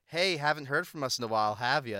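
put-on mocking tone. Retelling an email apology from U A B: imitating a mocking tone. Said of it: "like, a mocking sorry".

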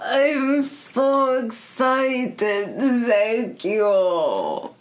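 acted vampire voice with a German accent. As Dracula, answering someone who asked for help, in German Dracula accent. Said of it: "Now you're a German Dracula".

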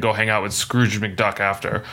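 ordinary talk

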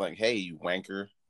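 soft, quiet, casual American accent. Joking about how Americans say it, imitating an American accent. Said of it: "That's how Americans say it".

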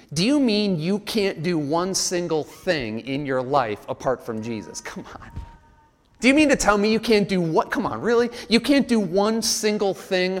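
play-acted, dripping sarcastic, scoffing tone. A speaker voices what the world will say to the listener, imitating a sarcastic tone. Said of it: "In a sarcastic tone".

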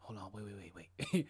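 unvoiced, low whispered stammer, inner-thoughts style.

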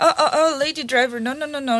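ordinary delivery

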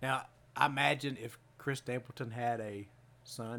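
ordinary delivery

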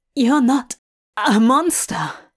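gasping, breathless delivery. Narrator reads Hob's reply to the stranger, gasping. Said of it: "he gasps".

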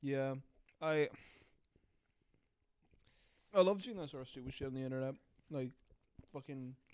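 talking with mouth full while chewing. Speaker chatting into the mic while eating Toblerone, talking while eating. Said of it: "Sorry, I'm eating fucking Toblerone".

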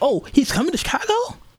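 mock-surprised, acted genuine surprise. Retelling a sister's reaction to news, imitating genuine surprise. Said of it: "She was like so genuinely surprised".

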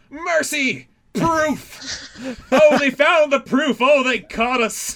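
dramatic panicked shouting, high-pitched and loud.

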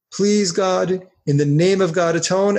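plain

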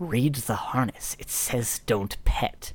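drawn-out, slow, hushed whisper. Voicing a character warning a player not to pet the dog: whispering. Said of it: "whispers to you".

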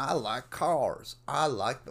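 slow, drawn-out bad Southern accent. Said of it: "always do a f-, fucking bad Southern accent".

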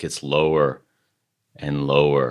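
dropping voice. Describing something getting lower and lower, dropping the voice lower. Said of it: "You like how I drop my voice?".

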